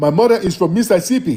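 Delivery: put-on Nigerian English accent. Imitating a man who claims Mississippi: imitating a Nigerian accent. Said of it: "Not with that accent".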